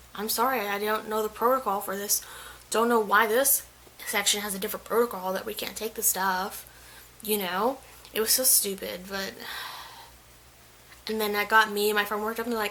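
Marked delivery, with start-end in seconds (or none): none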